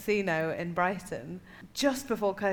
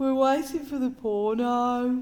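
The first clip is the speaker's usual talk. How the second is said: put-on high, slow voice in Birmingham accent. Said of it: "just trying to be the accent".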